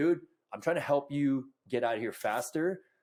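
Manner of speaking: ordinary talk, nothing marked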